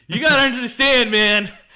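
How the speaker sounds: high, loud panicked begging.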